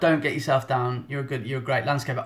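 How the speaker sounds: normal talking voice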